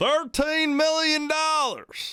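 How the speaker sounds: put-on high-pitched Kentucky accent. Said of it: "Do I sound like I'm, I'm from Kentucky?".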